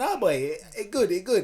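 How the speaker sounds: put-on weak, off-target Trinidadian accent. Imitating a Trinidadian friend who likes bloody steak: bad Trinidadian accent. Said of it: "that's not a Trini accent by any means".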